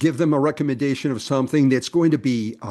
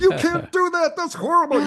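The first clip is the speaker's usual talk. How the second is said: put-on scream, higher pitch. Retelling how a winemaker reacted to a question: imitating someone screaming. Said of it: "he started screaming at me".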